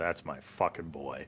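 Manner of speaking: very quiet, low, barely audible mutter. From across the room, a character reacts so no one else can hear, under his breath. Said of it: "says under his breath so quiet".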